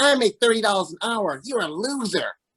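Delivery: cartoonish, cartoony jeering and taunting voice. Retelling how a friend went off on them, imitating a friend. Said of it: "he talks exactly like Roger from Doug".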